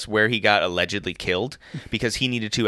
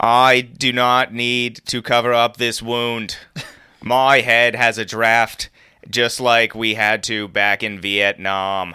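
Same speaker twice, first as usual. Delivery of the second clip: loud, formal speech-style delivery; 5 dB louder than usual. Performing a requested impression for the others: John F. Kennedy impression. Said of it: "That's a pretty good J F K".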